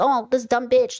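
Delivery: imitated judgmental voice. Retelling how the asker reacted to someone struggling: imitating a judgmental asker. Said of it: "you just went like".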